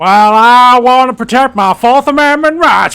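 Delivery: blaring, drawn-out, high-pitched American monkey voice. Asked by the other speaker to voice an American monkey: American monkey voice. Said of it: "what an American monkey would sound like".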